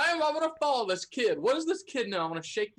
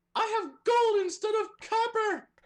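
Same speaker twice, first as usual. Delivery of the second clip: very high, shouted in-character yell; 13 semitones higher than usual. Voicing a character calling after a fleeing kid: character yelling. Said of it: "Valbar yells".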